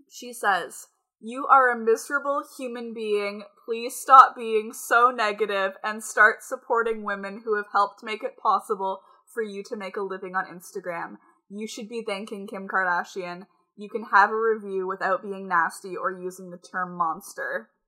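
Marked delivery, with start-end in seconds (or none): none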